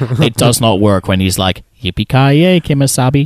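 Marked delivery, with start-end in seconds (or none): 1.8-3.3 put-on small voice, much higher pitch. Imitating how he says a line in a film, high little tone. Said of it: "in that high little tone there".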